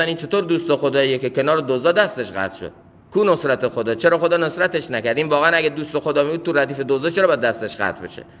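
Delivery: ordinary delivery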